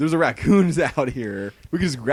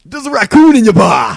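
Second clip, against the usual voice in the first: very loud, high-pitched shout; 9 semitones higher, 12 dB louder than usual. Taking a turn at the same intro line: John Taffer impression. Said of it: "that's pretty good".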